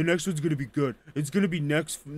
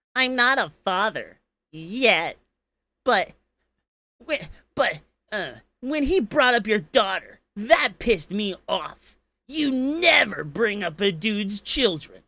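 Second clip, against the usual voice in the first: over-the-top, exaggerated put-on camp voice, pitched high; 5 semitones higher than usual. Reading a message aloud, speaker uses an exaggerated camp put-on voice. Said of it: "let me read this in the most gayest voice I can".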